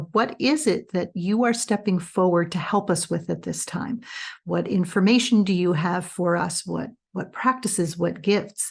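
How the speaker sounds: ordinary talk, nothing marked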